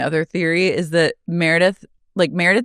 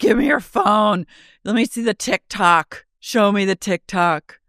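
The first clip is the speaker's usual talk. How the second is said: acted-out, mock screaming; 3 semitones higher than usual. Describing a woman kicking seats and spilling wine, retelling someone screaming. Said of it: "She's screaming at everyone".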